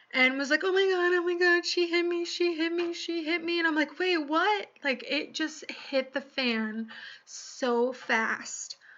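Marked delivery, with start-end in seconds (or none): 0.7-3.6 put-on crocodile tears, high, fake-tearful voice. Retelling how a woman fell and accused the speaker of hitting her, imitating fake crying. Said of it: "started the fake tears".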